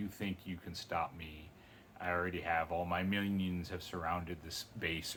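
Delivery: ordinary talk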